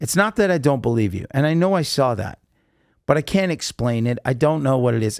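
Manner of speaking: ordinary talk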